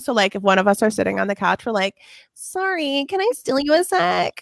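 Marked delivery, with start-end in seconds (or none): 2.3-4.4 put-on high, drawn-out dating-show contestant girl voice. Showing the bit two people constantly do to each other, in the Bachelor girl voice. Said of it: "the Bachelor girl voice".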